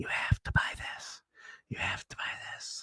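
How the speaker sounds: hushed, breathy, close whisper. Joking that a little Marvel creature comes while you sleep and talks in your ear: whispering. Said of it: "he whispers in your ears".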